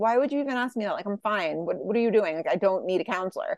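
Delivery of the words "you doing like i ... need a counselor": ordinary talk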